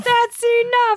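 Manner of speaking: put-on angry shout. Retelling a scene where a man stands angry in the rain: imitating an angry shout. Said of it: "He's so angry".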